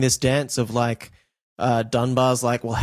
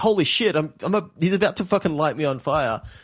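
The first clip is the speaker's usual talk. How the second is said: mock panicked voice, higher; 3 semitones higher than usual. Retelling a film scene where gasoline is poured on someone: imitating Dunbar freaking out. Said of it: "when he's freaking out, it's like".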